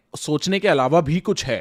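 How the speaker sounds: plain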